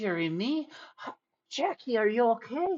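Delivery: very high, fretting, fussing, worried mother voice. Speaker retelling a scene, voicing the mother reunited with her son, mock-worried. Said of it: "like the worried parenting".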